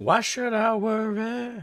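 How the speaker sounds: mock high, slow, squeaky whining voice.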